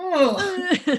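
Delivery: acted, long, weary, high, drawn-out old dad groan. Voicing a character being helped up: old dad groan. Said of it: "makes that old dad sound where it's like".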